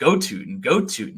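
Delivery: mock excited fan hollering, cheering yell. Retelling how a friend watches football when Tootin has the ball: imitating Jay yelling. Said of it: "He just yells it every time".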